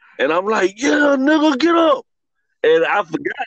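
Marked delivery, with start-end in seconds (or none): 0.2-2.1 mock scream, much higher, slower. Retelling knocking a kid down on the court, retelling screamed trash talk. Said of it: "I'm screaming at him".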